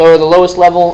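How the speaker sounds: ordinary delivery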